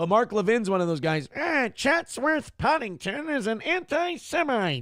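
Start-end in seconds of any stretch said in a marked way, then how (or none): 1.4-4.8 shrill, very high, slow, drawn-out yell. Imitating a radio host accusing someone: Mark Levin impression, yelling high-pitched. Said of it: "the more he yells, the more high pitch".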